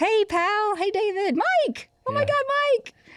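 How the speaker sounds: very high, drawn-out, chirpy calls. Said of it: "just chirp".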